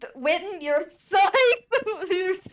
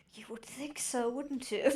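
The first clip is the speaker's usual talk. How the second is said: very quiet whispered aside; 6 semitones lower, 12 dB quieter than usual. Voicing Protean whispering a reply to another character: whispering. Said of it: "Protean whispers back".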